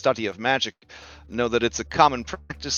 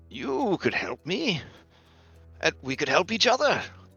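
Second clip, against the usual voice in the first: meek, timid character voice, higher; 4 semitones higher than usual. Voicing a timid magic scholar pleading for help rescuing his friend: timid character voice. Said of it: "he does have a timid, um, sort of demeanor".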